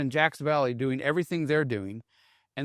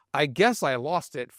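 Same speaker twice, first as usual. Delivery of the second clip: ordinary delivery, nothing marked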